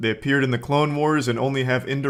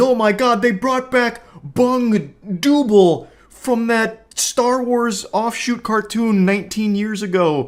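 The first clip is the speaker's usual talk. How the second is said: mock, very high, frantic, losing-their-mind gushing shriek; 10 semitones higher, 5 dB louder than usual. Mocking fans reacting to new shows on screen, imitating a frantic fan. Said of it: "at the screen like losing their mind".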